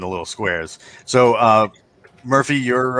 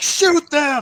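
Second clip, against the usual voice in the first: very high, shrill, screeching shout. Voicing an armored commandant ordering guards to shoot: Cobra Commander shout. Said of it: "one of those, like, Cobra Commanders".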